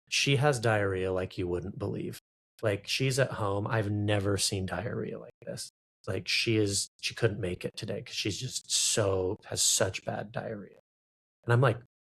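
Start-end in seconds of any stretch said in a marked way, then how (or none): none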